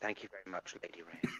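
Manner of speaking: soft, hushed half-whisper. Thanking someone during an acted scene, half-whispering. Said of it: "Like whispering".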